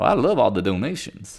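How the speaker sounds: put-on Southern accent. Speaker imitating a senator talking about money, in a southern senator accent. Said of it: "You ever heard an accent like that?".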